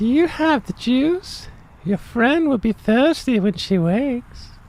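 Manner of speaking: very high, goofy, squeaky silly character voice. Voicing a character again, the speaker does that silly voice. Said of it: "let's do that silly voice again".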